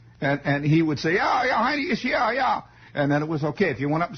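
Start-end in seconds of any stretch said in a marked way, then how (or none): 1.2-2.6 put-on terrible high-pitched Bavarian German accent. Retelling an old exchange, in a terrible bavarian german accent. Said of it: "my terrible, rotten Bavarian German accent".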